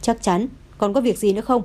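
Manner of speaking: ordinary delivery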